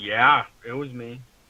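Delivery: play-acted slow, condescending talking-down voice with attitude. Retelling a ghost's answer to a question: imitating a condescending reply. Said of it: "almost with an attitude, like, condescending".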